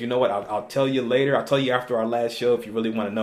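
ordinary delivery

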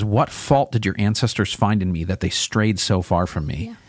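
ordinary talk

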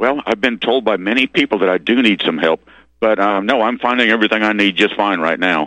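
ordinary talk, nothing marked

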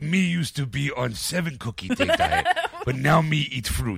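voice dropped low with swinging pitch. Joking about a cookie diet: Cookie Monster voice. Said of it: "that's how he sounds".

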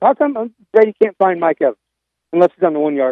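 ordinary delivery

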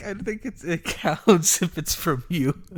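high, breathless speech choked with helpless laughter.

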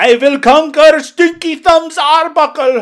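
shrill, very high, stretched-out yell. Quoting a character's line from the movie: yelling as Klaus. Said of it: "me yelling that just then".

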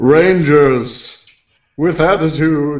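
put-on booming mentor voice. Asked to say something as Zordon, echoing voice: Zordon voice. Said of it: "just say something Zordon would say".

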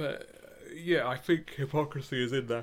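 speaking through a yawn. During a discussion, yawning while talking. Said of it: "I'm yawning".

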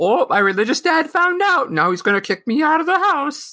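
dopey dumb-guy voice. Describing a trope they avoided, voicing the character in a stupid guy voice. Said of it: "What voice was that?".

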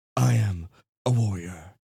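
arrogant, officious warrior voice with pauses. Trying out a voice for their character, pausing warrior voice. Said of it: "I have to pause between all sentences".

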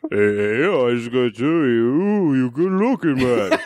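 put-on slow accent with ooh drawn out. Saying a requested line in an accent: Sylvester Stallone accent. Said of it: "I wanna hear both of you in your accent".

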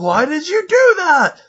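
high, slow, very frustrated whine.

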